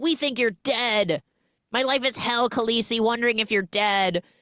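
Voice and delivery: put-on Serbian accent with broken English. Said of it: "a little bit of broken English slash Serbian accent".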